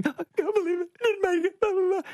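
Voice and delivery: fake sobbing wail, pitched very high. Retelling sitting in the gutter after being rejected: retelling own past crying. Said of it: "fake crying, because I'm crying".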